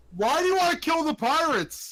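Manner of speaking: high-pitched yelling. In a role-play, yelling questions at a character who can't hear. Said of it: "Why are we yelling?".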